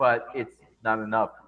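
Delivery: plain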